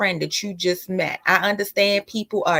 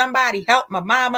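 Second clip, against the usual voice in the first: mock child crying and screaming, higher pitch; 4 semitones higher than usual. Retelling kids in a grocery cart calling out: imitating kids crying and screaming. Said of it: "Her kids is in the cart crying and screaming".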